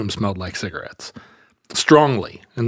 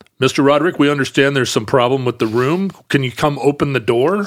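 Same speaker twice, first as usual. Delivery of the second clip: mock severe, stern, firm, no-nonsense voice; 3 semitones higher than usual. Retelling a knock on the hotel room door: imitating a stern voice. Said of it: "a stern voice that said".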